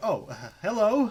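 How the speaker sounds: startled goblin voice. Game master voicing a three-foot goblin surprised by the players' approach: startled goblin voice. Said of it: "he kind of jumps, and he's like".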